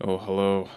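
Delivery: deflated, dreading tone, with an "oof", bracing. Greeting the co-host at the start of the podcast: oofed, dreading tone. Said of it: "is that your tone just going into this movie".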